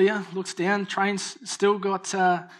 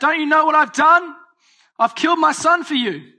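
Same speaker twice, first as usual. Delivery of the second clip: very loud, high-pitched yell; 8 semitones higher, 9 dB louder than usual. Retelling a father calling out to people going past on a train, retelling a yell. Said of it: "he yells out".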